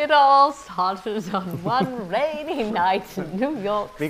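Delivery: badly done put-on English narrator-style accent. An american starting to narrate a story for viewers, in a bad fake english accent. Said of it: "narrated by an American in an English accent".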